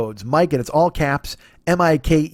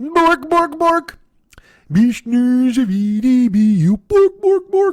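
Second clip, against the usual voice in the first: very high, drawn-out, squeaky "bork" gibberish; 10 semitones higher, 4 dB louder than usual. Doing a joke bit, talking like the Swedish Chef. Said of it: "talk like the Swedish Chef".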